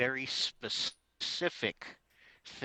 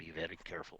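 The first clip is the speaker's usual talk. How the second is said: very quiet hushed whisper, lower and quieter; 6 semitones lower, 15 dB quieter than usual. Warning the rest of the party in character: very quiet whisper. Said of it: "Very quietly whisper to the rest of the party".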